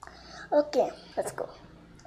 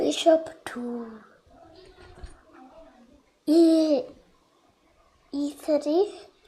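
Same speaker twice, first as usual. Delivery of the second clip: faltering, half-whispered voice not coming out right. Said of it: "my voice was not good that time".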